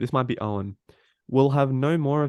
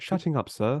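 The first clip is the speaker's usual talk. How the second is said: put-on prim robot voice, quieter; 3 semitones higher, 4 dB quieter than usual. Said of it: "a C three P O quote".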